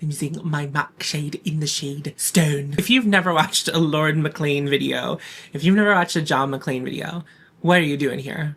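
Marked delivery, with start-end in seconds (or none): 0.0-2.8 YouTuber-style voice with catchphrase-like delivery. Quoting a YouTuber who always uses mac: imitating John McClane. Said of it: "He's like".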